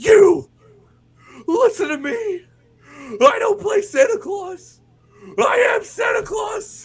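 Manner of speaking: very loud, high, slow, drawn-out promo voice. Retelling a wrestler speaking from stage: Mankind Cactus voice. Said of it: "full Mankind Cactus voice".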